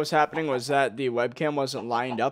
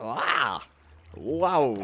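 drawn-out wow, voice cracking. While building with signs to block water, surprised, voice cracking. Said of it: "Voice crack".

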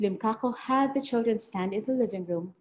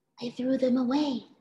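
soft hushed whisper; 3 semitones higher than usual. She answers a whispered question while officers search the house: whispered back. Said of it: "she whispered back".

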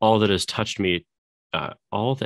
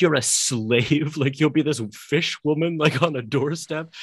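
high, play-acted, scornful, disdainful contempt; 7 semitones higher than usual. Retelling what a man said to a woman, mock-contemptuous retelling. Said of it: "he's almost saying it like very contemptuously".

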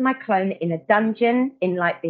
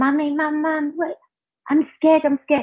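mock terrified little child, high frightened scream; 7 semitones higher than usual. Retelling a dream where the son screamed for his mum: imitating a scared screaming child. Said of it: "He started screaming".

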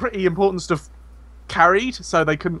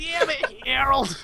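put-on high, soft, scolding elderly New York voice.

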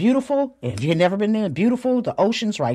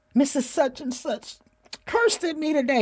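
put-on high, tearful, inconsolable crying child voice; 9 semitones higher than usual. Retelling her grandchild's words after getting off the bus: imitating a child crying. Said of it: "she was inconsolable".

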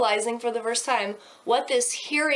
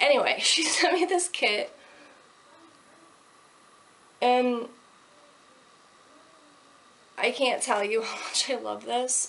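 emotion barely held in check. Talking about a kit someone sent her, holding back emotion. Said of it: "I'm trying not to get emotional".

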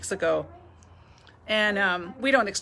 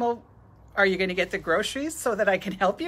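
usual speaking voice

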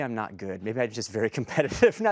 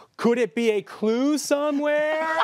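exaggerated, slow, loud, very high obnoxious tourist voice; 13 semitones higher, 5 dB louder than usual. Retelling talking to non-English speakers in an escape room: imitating own exaggerated obnoxious tourist talk. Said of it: "obnoxious tourist thing".

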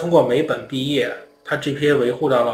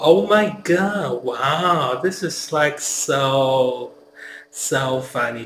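exaggerated California girl accent, drawn-out "so". Describing a california girl vibe, in an exaggerated california girl accent. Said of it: "就是加州那种腔调，那个加州女孩那种腔调".

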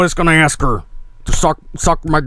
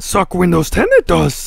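silly put-on voice with big swooping pitch swings; 2 semitones higher than usual. Answering Cortana's bad Yoda voice, the speaker does his own Yoda impression. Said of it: "combat her shitty Yoda impersonation with my own".

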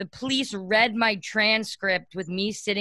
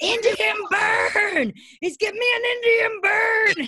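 put-on, reenacted screaming, much higher pitch; 13 semitones higher, 4 dB louder than usual. Recounting being handcuffed by police at a college stadium, reenacting their own screaming. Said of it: "I started screaming".

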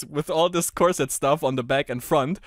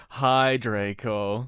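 mock-depressed voice, much lower pitch; 5 semitones lower than usual. Retelling how they greeted a guy, acting out a depressed voice. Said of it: "I said in a depressed voice".

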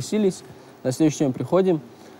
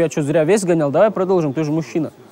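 ordinary talk

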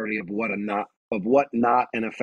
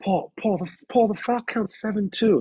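gentle, coaxing tone, very high-pitched; 11 semitones higher than usual. Imitating a coach bringing up the foul count: imitating a coach's soft tone. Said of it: "if he comes at me in a soft tone like that".

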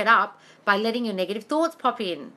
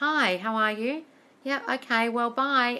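mock dry, formal delivery; 2 semitones higher than usual. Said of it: "it's dry and it's formal".

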